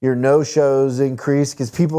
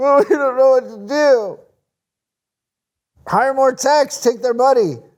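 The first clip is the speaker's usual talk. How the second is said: very high, blubbering fake sobbing whine; 11 semitones higher than usual. Speaker mimics a business that won't hire more techs, mock crying. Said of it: "I love the cry".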